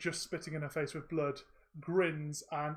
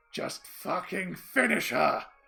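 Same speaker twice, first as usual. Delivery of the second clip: loud, rough gurgling shout; 7 dB louder than usual. Voicing a wounded fighter shouting through a mouth of blood. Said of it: "through a blood clot filled ... mouth of blood, shouts".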